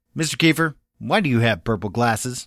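mock pointed, accusing, demanding tone. A teacher retells students asking about his purple glasses: mimicking an accusatory tone. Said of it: "in almost an accusatory tone".

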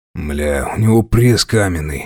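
deep, very low grumbling. The gang leader remarks after punching a captive in the stomach, grumbling. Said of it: "пробурчал главный".

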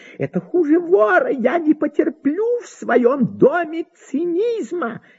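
sharp, high, drawn-out crying out. Marya Mikhailovna, told that Pelageya's fireman has come, is crying out. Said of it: "вскрикнула Марья Михайловна".

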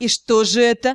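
almost mocking, nearly derisive. A woman reproaching a man asks him, almost mocking. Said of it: "почти с издевкой".

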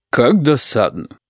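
put-on vexed, put-out old woman's voice. A narrator reads an old woman's remark in a train car, in a bass voice. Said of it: "басовито сказала она".

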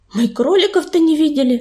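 plain

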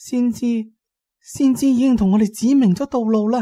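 very high, trembling, quivering with held-in excitement. Narrator reads the line spoken pointing at the prophet's remains, trembling with excitement. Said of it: "佢声音颤抖，按耐唔住心中嘅激动".

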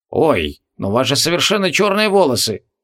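sour, disapproving mutter squeezed through the teeth. A man with a box of cosmetics looks over the work, disapprovingly through the teeth. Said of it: "неодобрительно процедил".

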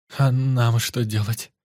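slow, shaky, faltering, trembling timid babble. Narrating, Ira asks the others what they should do, trembling voice. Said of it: "Дрожащим голосом пролепетала Ира".

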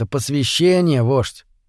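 ordinary delivery

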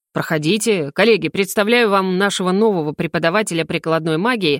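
plain

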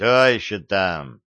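growling. Narrator reads a man answering a phone call at 3:20, growling. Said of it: "прорычал я".

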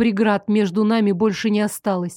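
ordinary delivery

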